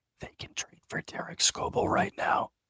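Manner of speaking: hushed whisper. Whispering a remark to the other speaker during a discussion: whispering. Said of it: "can you hear me if I whisper?".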